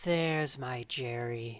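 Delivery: creepy, eerie, unsettling tone. Retelling a scene where she walks to the screen: imitating a creepy line. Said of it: "she creepily walks up to the screen and says".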